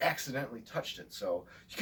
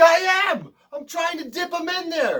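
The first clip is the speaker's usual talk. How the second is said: irritated, indignant, angry, pitched-up voice; 14 dB louder than usual. Retelling how he snapped back when told to look at what he was doing, mock-angry. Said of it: "And angrily, he's like".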